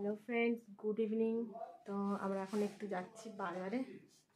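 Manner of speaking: soft, hushed voice.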